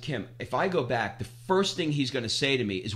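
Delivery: ordinary delivery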